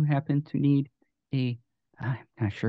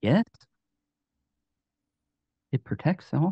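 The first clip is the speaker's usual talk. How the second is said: gentle, kindly elemental spirit voice; 3 semitones higher than usual. Narrator voices an elemental spirit of light answering a question, very soft spirit voice. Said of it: "a very soft voice".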